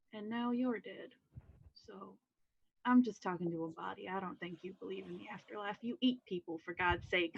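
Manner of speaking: softly spoken. Speaking in character at a grave to a dead body: very quiet. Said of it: "very quietly tell him".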